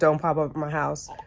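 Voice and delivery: ordinary talk, nothing marked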